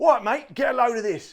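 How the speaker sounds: loud put-on Cockney London accent. Reading from the website in a put-on cockney accent. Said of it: "I shall be doing my Cockney accent again".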